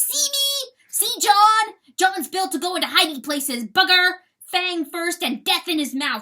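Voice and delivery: booming, very loud, high roar. Reading a story aloud, voicing john as he stretches out and roars. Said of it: "He extended his long body and roared".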